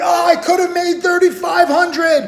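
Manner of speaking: annoyed complaining shout, loud and high. Speaker mimicking people angry over a missed trade, retelling a yell.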